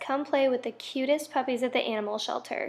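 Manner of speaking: normal talking voice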